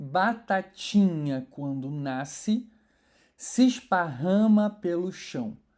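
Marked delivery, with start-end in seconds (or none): 0.0-2.7 batatinha with strong stress on ti. Scanning a redondilha maior verse: emphasis on ti in batatinha. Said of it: "Por que eu dei essa ênfase no meio da frase? Porque naturalmente essa terceira sílaba poética se destaca".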